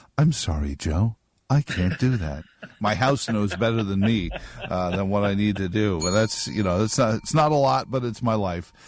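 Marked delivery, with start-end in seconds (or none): 0.2-2.5 calm robotic computer voice. Speaker imitating his integrated house refusing his request: HAL voice. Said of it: "The little voice from Hal".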